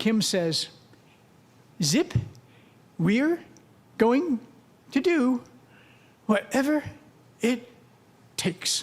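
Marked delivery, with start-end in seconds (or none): 1.8-8.8 halting, broken-up, higher-pitched delivery. Retelling what Kim said on a speaker phone: imitating Kim's halting voice. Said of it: "In her halting voice".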